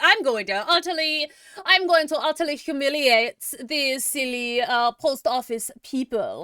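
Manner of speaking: put-on poor German accent. Imitating the attacker who expected the post office people to surrender: bad German accent.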